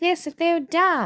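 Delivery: very high airhead voice. Criticizing how musicals make dumb characters talk, the speaker uses a mock dumb-character voice. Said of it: "they always have to talk like".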